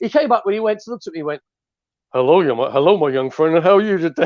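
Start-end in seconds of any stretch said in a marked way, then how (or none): 2.1-4.3 deep baritone put-on voice. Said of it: "that voice of it is that baritone".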